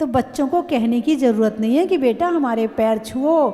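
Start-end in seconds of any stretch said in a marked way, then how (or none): none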